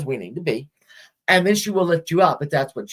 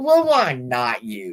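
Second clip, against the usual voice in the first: very drawn-out, slow, deliberate grandma voice; 5 semitones lower than usual. Retelling how a grandmother said it to the speaker: imitating grandma's way of saying it. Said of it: "I remember the way she said it".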